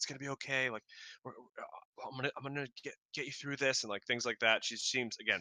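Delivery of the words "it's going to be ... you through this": anxious, halting, nervous hushed half-whisper. Voicing a nervous character half-whispering comfort to the sick captain: nervous half-whispering. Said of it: "whispering to him".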